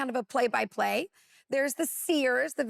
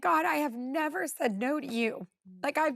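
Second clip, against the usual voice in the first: acted-out tearful crying while speaking. Speaker recounts praying to God, re-enacting their own past crying. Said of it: "just crying and saying".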